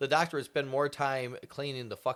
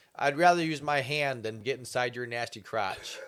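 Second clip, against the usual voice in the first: normal talking voice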